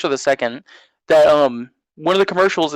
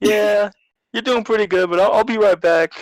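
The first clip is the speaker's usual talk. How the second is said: put-on plain, higher-pitched New York accent; 6 semitones higher than usual. Recalling the tutorial guy from a Spider-Man game, imitate him in a New Yorker accent. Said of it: "like this New Yorker too".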